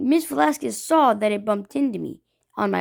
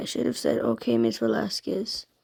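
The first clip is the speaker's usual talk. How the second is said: ordinary talk, nothing marked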